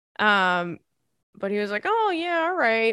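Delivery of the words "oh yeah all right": put-on mock-casual indifference, much higher. Speaker acts out their dad pretending not to know it's Father's Day, imitating dad feigning indifference. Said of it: "pretending he doesn't know it's Father's Day".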